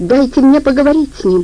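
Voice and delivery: high-pitched, pleading, begging shout. A woman, told a man is held captive, shouts to the caller: pleading shout. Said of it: "умоляюще прокричала женщина".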